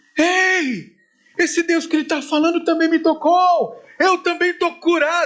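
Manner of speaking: very high jubilant shout with long stretched ei. Telling the brothers about a stadium crowd, another person cries out: retelling a shout. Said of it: "começou a gritar também".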